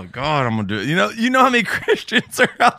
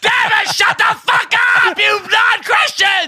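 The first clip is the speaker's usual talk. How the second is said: put-on preacher yell, very high-pitched; 5 dB louder than usual. Mimicking another speaker's voice mid-sermon: put-on yelling. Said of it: "he got out in that mode of yelling".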